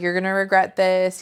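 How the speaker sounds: put-on, acted angry voice. Retelling a show scene where Wallace is very pissed: imitating an angry Wallace. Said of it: "we know Wallace is pissed".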